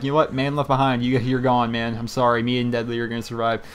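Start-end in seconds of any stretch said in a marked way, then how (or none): none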